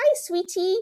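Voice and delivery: very high, cute, sweet, doting motherly voice. Retelling how mom answers the phone: imitating mom's sweet greeting. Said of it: "she's like".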